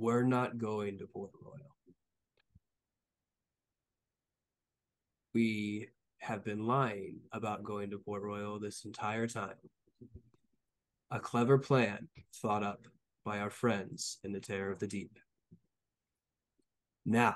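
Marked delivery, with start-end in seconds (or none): 0.0-15.2 quietly spoken, hushed words. A game character speaks to everyone at the table: speaking really quietly. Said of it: "Now I'm going to speak really quietly".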